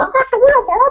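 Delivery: very high-pitched cartoon puppet frog voice. Imagining a self-driving car assistant talking: Kermit the Frog voice. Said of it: "Kermit the Frog type character that's like".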